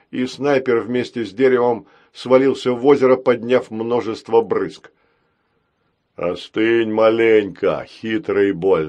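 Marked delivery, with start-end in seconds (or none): 6.1-8.8 sly, deep bass voice. A horned robot, after knocking a sniper into the lake: deep bass voice. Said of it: "пробасил рогатый робот".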